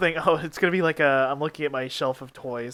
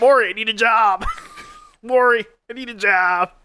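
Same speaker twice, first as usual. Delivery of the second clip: slow, drawn-out pleading, high, swooping pitch; 6 semitones higher, 3 dB louder than usual. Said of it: "that's my [name] asking [name] for a job impression".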